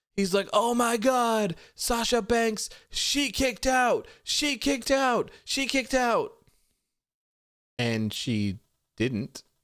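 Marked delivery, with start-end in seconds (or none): 0.6-6.4 screamed sportscaster voice, very high. Retelling a commentator's call after a win: imitating Michael Cole screaming. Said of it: "Michael Cole was screaming".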